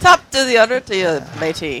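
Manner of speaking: put-on pirate voice in Irish accent. Telling the group that Elena is up next, in an Irish pirate voice. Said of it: "an Irish pirate?".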